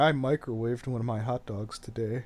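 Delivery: sullen, angry, put-out pouting tone. Imagining another speaker on the porch, imitating someone angrily pouting. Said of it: "angrily pouting on the porch, going".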